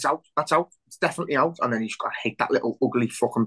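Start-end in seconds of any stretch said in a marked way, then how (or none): 0.0-1.6 emphatic, insistent, shouted protest. Speaker recalls watching a disputed ball decision: retelling own shouting. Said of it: "and I'm shouting".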